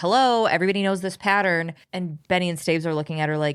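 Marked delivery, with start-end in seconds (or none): 0.0-1.7 matter-of-fact, no-nonsense, plain delivery. Retelling a woman explaining a pattern to detectives: imitating a matter-of-fact tone. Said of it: "she says it's so matter of fact".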